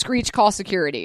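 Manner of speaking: usual speaking voice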